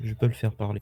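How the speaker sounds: whispered, in a character voice. Speaking in character to a companion during the game: whispering in character. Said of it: "Je chuchote à Brooke".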